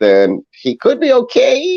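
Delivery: doubtful, unsure voice creeping up very high. Giving a hedged opinion about a player's chances, voice rising higher. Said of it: "Got my voice got higher".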